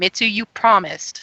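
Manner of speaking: somewhat loud, mildly angry. In a role-play, one character confronts another about a promise: loud, slightly angry. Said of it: "kind of like a little bit loud, slightly angry voice".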